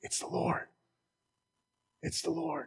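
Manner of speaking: awed, high, hushed whisper. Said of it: "the disciple who Jesus loved says".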